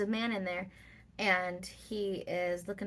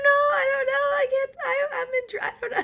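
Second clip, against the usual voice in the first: put-on panic, much higher; 11 dB louder than usual. Telling the story of being scammed, retelling own panic. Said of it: "And so I'm freaking out".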